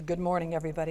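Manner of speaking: put-on voice dropped way down deep. Telling a true story, the speaker retells the guy who took the mic: deep voice. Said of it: "in this deep voice".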